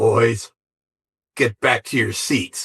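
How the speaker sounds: sinister, evil, scary villain voice. Retelling how she ordered the boys back to their seats, imitating her evil voice. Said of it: "she had this voice that when she spoke was evil".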